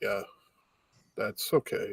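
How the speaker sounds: acted, breathy, deadpan monotone whisper. Describing a costumed show character's replies, mimicking Putan's monotone. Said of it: "Putan just very monotone".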